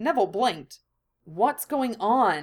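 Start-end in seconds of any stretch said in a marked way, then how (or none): 1.2-2.4 demanding tone, voice kept low. Narrator reads Neville questioning Hie as she steps into view, low-voiced demand. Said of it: "he demanded, thankfully keeping his voice low".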